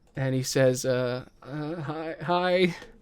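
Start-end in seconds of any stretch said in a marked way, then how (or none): 1.4-2.8 very slow, hushed, frightened halting stammer. Role-playing a soft boy meeting someone through a crack in the wall, scared. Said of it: "he is scared as fuck".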